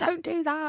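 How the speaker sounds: angry, high-pitched scolding cry. Retelling how mum screamed at the brother from downstairs: imitating mum screaming. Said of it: "screaming at him downstairs".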